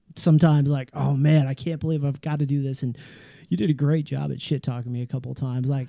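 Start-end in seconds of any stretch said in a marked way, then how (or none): none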